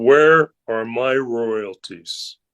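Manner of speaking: mock-deadpan delivery. Recalling a man who walked into the dressing room, retelling a deadpan remark. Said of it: "with a deadpan look on his face".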